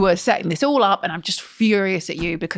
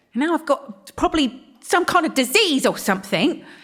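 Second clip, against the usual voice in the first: thoroughly fed-up rant, pitched high; 7 semitones higher than usual. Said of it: "I think [name] is fed up".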